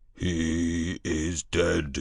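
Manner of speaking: resonant, vibrating voice, drawn-out "he". Narrator voicing an unseen speaker approaching through the trees, deep, vibrating voice. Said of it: "said a deep, vibrating voice".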